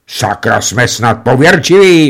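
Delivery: curt, sharp tone. Narrator reads a man answering his frightened friend at the gramophone, snapping back. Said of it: "odsekl Venca".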